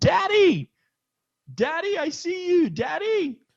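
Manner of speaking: excited, loud yelling.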